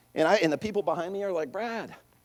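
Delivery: plain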